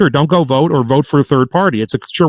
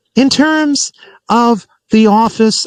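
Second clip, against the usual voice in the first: put-on rambling politician voice, higher-pitched; 8 semitones higher than usual. Doing an impersonation of Harris during a conversation: Kamala Harris impression. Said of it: "I'll do my impersonation of Harris".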